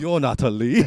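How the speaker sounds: put-on British Chinese accent. Retelling how a man at the counter reacted: imitating a British Chinese accent. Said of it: "your accent was like, it was British Chinese".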